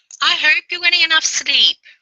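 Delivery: put-on mother voice, very high, loud and shrill. Saying a caring line in a put-on mum voice.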